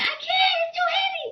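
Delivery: play-acted, very high, tearful crying scream. Retelling struggling to carry a heavy tv on a bike, retelling own screaming and crying. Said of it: "I'm screaming, crying, like".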